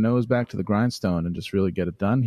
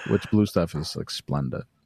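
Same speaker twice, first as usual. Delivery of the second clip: ordinary delivery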